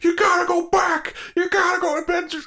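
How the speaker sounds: very high, shrill, loud screaming voice. Retelling a film scene where the guy on the phone screams: imitating someone screaming.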